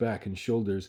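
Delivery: ordinary delivery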